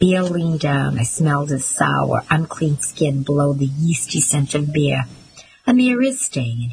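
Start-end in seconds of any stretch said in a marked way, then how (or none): 5.7-6.7 high-pitched, contemptuous, scornful sneer. Reading a man who leans down to answer a yelled demand, sneering. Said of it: "he sneered".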